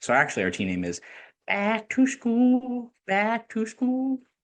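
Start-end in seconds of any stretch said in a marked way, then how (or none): 1.5-4.2 very high, very slow, deliberately bad clumsy voice. Announcing your team name differently because it reminds you of Billy Madison, a very bad Billy Madison impersonation. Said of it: "I'm reminded of uh, Billy Madison here... That's a very bad impersonation".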